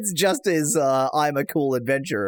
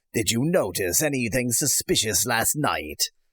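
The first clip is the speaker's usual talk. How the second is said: put-on pirate voice; 3 semitones lower than usual. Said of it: "trying to give him a, uh, piratical voice".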